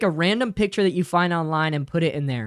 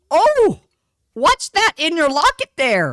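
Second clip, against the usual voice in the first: put-on very high, swooping, sing-song old lady voice; 10 semitones higher, 6 dB louder than usual. Telling chat what some old lady will ask you someday, in an old lady voice. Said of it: "That's what an old lady sounds like".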